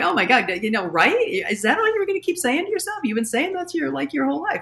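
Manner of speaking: high, fast, snarky jab. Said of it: "at least snarky humor of like".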